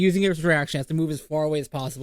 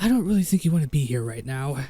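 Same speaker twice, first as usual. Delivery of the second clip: hushed whisper under the breath. A character casts Dissonant Whispers on a foe: whispering under his breath. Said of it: "he's just gonna wh whisper under his breath".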